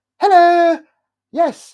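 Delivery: very high, loud telephone voice. Describing how mum changed her voice answering the phone, imitating mum's phone voice. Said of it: "phone voice".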